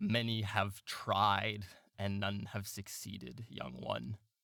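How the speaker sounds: eerie, otherworldly, hollow, echoing, haunting voice. A game narrator voices the thin being carrying the staff, hollow, haunting voice. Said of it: "say in a hollow and haunting voice".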